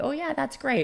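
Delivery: sugary sweet, polite tone. Imitating the automatic social reply: imitating sweet kind reply. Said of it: "societal, sweet, kind".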